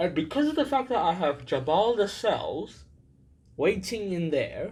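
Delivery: words dragged out mid-yawn. Speaker explains a team switch, talking while yawning. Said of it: "I shouldn't have talked while I was yawning".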